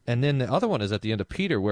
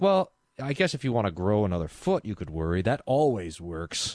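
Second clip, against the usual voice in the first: acted, playful, teasing sarcasm. Retelling the Sermon on the Mount, imitating sarcastic Jesus. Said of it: "The sarcastic Jesus".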